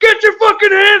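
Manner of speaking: shrill, very high screaming. Retelling being stopped by police at a guard gate: imitating cops screaming. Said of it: "they're all screaming at me".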